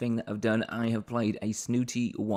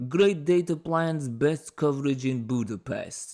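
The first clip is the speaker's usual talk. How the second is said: fake overdone Russian accent; 4 semitones higher, 3 dB louder than usual. Recounting a silly European mobile phone entrepreneur character, terrible stereotypical Russian accent. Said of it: "Terrible, terrible stereotypically Russian accent".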